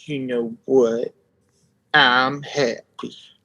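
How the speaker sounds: very slow, dragged-out cartoon-dog voice, every word drawn out. Trying to remember a cartoon voice: Droopy Dog impression. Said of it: "a Droopy Dog quote".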